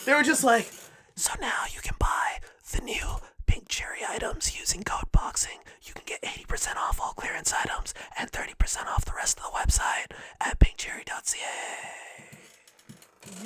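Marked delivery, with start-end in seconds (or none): 1.2-13.5 whispered, breathy ASMR-style delivery. Retelling what others did while the speaker was away, an ASMR-style ad read. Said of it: "doing A S M R voices and ad reads".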